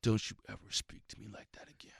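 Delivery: dead-serious, menacing, threatening whisper. Retelling a fighter leaning in with a warning: imitating Bob Sapp's menacing threat. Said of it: "in a different voice, not a funny voice".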